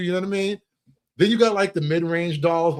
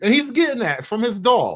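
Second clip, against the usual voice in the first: ordinary delivery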